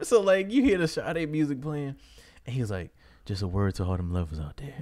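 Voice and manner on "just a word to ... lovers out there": mock smooth radio DJ voice, pitched lower. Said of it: "real smooth".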